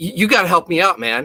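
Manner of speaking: put-on frantic, panicked male voice. An inspector retelling how a man ran up to him, imitating a frantic man. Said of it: "He seemed like real frantic and panically".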